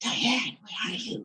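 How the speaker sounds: soft, breathy, searching whisper, barely voiced. Retelling a brother searching for his cousin: imitating someone whispering. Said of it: "he was whispering all over the place".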